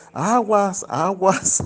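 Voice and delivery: high, urgent shout. Retelling warning a distracted man about an oncoming trolleybus: imitating own past yelling. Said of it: "yo le gritaba".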